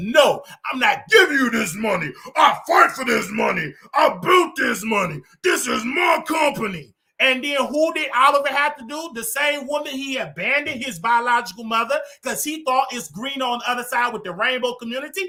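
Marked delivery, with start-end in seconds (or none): 0.0-6.9 deep-voiced delivery. Retelling being refused the rent, the speaker quotes TS Madison in her deep voice. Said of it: "with that deep voice".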